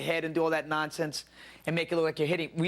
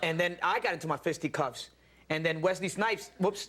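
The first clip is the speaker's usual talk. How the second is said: normal talking voice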